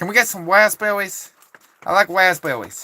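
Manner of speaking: put-on American woman accent. Speaker showing how they think American women sound, put-on American woman accent. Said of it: "that's the best I I figure they sound something like".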